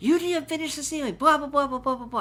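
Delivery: high-pitched, berating, scolding yell. Retelling the foreman's complaint about the unfinished ceiling: imitating a foreman yelling. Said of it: "the foreman's, like, yelling at him".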